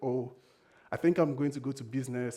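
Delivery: forced, put-on very happy, easygoing voice. Retelling calling a parent one morning with news: retelling a put-on happy tone. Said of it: "I had to say this in a very happy way".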